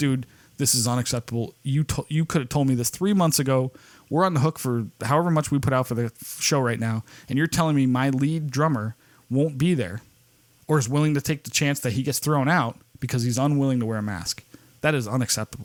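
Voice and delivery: ordinary talk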